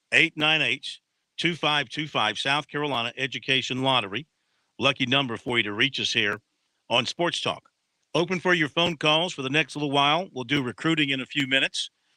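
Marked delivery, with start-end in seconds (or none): 0.1-2.3 slow, deliberate, each digit carefully spaced out. Sports talk radio host repeats the call-in number for listeners, slowed down. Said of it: "I'll slow it down".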